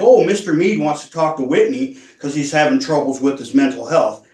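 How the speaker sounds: plain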